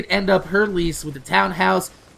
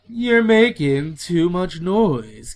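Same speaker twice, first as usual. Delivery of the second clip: put-on posh rich accent, slower. Retelling what an old man on a tv show would say at the door, posh rich accent. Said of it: "he had this real posh, like rich accent".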